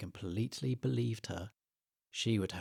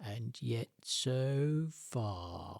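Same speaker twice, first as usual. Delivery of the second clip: slow, sneering, weaselly voice; 2 semitones higher than usual. Reading a story aloud, a creature taunts two young animals: sneering, slow weaselly voice. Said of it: "sneered a slow, weaselly voice".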